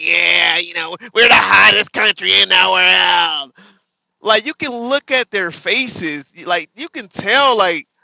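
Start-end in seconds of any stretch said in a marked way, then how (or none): 0.0-3.5 hammed-up, goofy, loud, rough joking president voice. Describing the president joking around at rallies: imitating the president's joking voice. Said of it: "making that voice".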